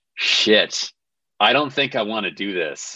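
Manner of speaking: plain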